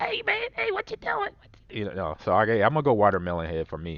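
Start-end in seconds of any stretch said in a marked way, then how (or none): 0.0-1.3 squeaky, very high-pitched little chipmunk voice. Imitating a shrunken-head character from a movie: imitating a little chipmunk voice. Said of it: "he had the little chipmunk voice".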